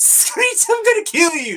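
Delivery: high-pitched put-on villain voice. Describing how Carnage sounds when reading the comic: high-pitched Carnage voice. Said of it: "It's in that high-pitched, high-key".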